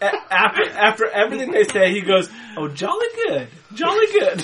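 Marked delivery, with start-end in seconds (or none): 2.6-4.4 very high, swooping, jolly, carefree chirp. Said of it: "All happy-go-lucky".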